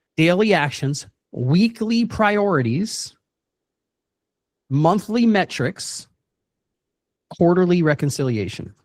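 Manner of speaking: slow, spaced-out, dictation-like pace.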